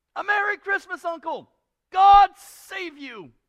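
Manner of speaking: high, loud, cheerful cry.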